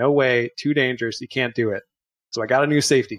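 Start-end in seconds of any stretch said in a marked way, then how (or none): none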